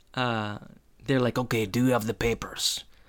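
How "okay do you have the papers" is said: put-on cartoon spy voice. Retelling how the fake parents speak to their son: Boris and Natasha voice. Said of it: "start speaking like Boris and Natasha".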